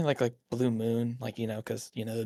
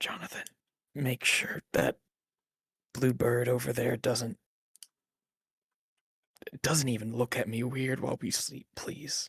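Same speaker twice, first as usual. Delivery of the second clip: confidential stage whisper. A character goes over to Jonathan to ask a favor, whispering. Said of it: "Goes over and whispers to Jonathan".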